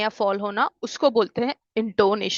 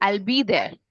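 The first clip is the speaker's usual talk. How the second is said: falling tone on the word there. Explaining English intonation, high on I'll, falling on there. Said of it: "आइल में ज्यादा मैंने stress दे के बोला, मतलब टोन मेरी ऊपर थी, देर में कम हो गए".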